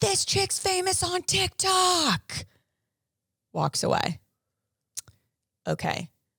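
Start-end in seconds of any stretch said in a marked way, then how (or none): 0.0-2.5 very high, very slow, drawn-out, mischievous scream. Recounting a tourist's parting joke during a tour, the speaker is imitating someone screaming. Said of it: "she screams as the tour guide's talking".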